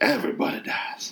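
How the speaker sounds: put-on odd, drawling whispered voice with Southern accent. Retelling a movie character's threat, whispered weird southern drawl. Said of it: "He whispers. He's got a weird southern drawl".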